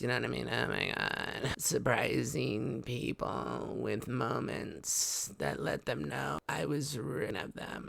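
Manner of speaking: hushed, very slow, soft drawl, words dragged out. Describing a cooking creator's go-to voices, doing the Kim Kardashian voice. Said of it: "They're all kind of doing the Kim Kardashian voice".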